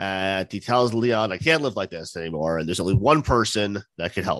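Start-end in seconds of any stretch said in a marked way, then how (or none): none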